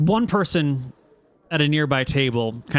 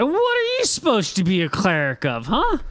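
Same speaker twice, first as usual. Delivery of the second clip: put-on slow, high, tipsy drunken man's voice; 8 semitones higher than usual. Voicing a drunk guy who questions a cleric: drunk man voice. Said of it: "The same drunk guy looks over you".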